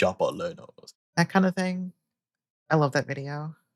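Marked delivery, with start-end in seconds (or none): 0.0-0.9 put-on hard tough guy voice. Imitating a voice from a favourite video: imitating the hard man guy voice. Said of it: "how do you do the voice again?".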